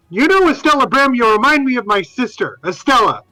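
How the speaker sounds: high, full-throated taunting yell, as loud as possible. A character taunting a creature to draw its attention, yelling as loud as possible. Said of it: "he's yelling out as loud as he can".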